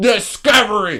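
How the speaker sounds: grand, rousing, powerful oratorical delivery. Repeating a single word over and over, with powerful, oratorical delivery. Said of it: "You say that with such power like you're Martin Luther King delivering I Have a Dream".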